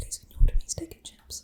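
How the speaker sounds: soft, timid, nervous whisper. Retelling asking the dad to order at a restaurant: imitating own past whisper. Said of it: "I would have to whisper to my dad".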